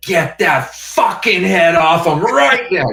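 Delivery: livid, furious, shrill, very loud shout, pitched way up. Retelling how Mila reacted when the head caught fire: imitating Mila, furious.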